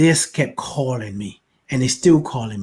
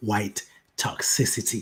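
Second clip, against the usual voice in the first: drawn out very slowly, hushed near whisper; 3 semitones lower, 7 dB quieter than usual. Repeating the phrase to listeners, saying it real slow. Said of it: "I gotta say that real slow".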